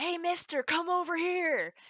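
slow, high, drawn-out holler. Retelling what the old folks would shout: imitating someone calling out. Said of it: "I'd hear them call out".

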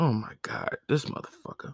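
dismayed, breathy whisper. Acting out God looking down at a killer: voicing God in dismay. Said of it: "And God is looking down, be like".

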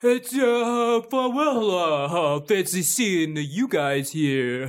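put-on New York tough-guy gangster accent. A character comes up on the shore and greets the group, New York gangster accent. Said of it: "do you sound like a gangster?".

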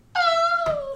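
put-on very high, swooning squeal of a smitten girl.

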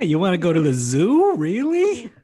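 speech with a Yiddish accent.

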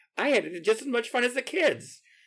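very high, put-on old grandma voice. Describing kids at the show, quoting a grandma coming out the door, in a grandma voice. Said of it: "There was my grandma voice".

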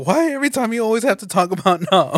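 mock high, fed-up, pissed-off angry outburst. Retelling how a movie character snapped at a friend: imitating a pissed-off outburst. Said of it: "he was pissed off".

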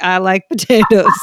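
loud, goofy, playful caricature joke voice. Showing how the family jokes about potatoes: joke voice of Joe. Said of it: "in this joke of a voice of Joe".

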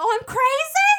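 high, loud, furious shout, screamed back loud. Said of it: "I started shouting back".

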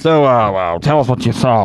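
put-on low, loud, booming old newscaster voice. Retelling a comedy sketch, imitating Bill Hader as an old man newscaster. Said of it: "Bill Hader's, like, this old man, uh, newscaster, and he's like".

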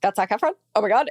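mock panic, fast and rattled off. Retelling her reaction after the eye contact, acting out panicking. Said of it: "like panicking".

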